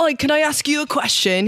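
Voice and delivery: put-on polite, proper English accent. Retelling what a man on the train asked: imitating a British accent. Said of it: "He was British".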